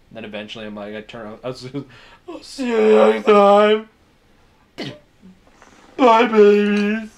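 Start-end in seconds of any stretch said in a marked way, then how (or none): 2.2-7.0 fake sobbing, higher and louder. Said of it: "It's just me crying for ten minutes".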